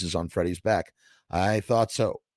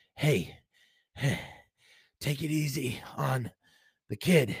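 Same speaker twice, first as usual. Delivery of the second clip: slow, drawn-out, high-pitched rasping voice; 5 semitones higher, 4 dB quieter than usual. Reading a story, one weakened man speaks up after the kid groans: rasped. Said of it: "Frank rasped".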